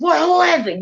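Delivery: put-on mean, angry yell. Retelling how the landlord answered the door: imitating an angry yell.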